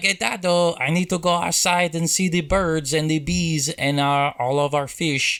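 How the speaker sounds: put-on small child voice with German-ish accent. A parent showing how the child talks, imitating a child's accent. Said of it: "he sort of talks like this when he's talking".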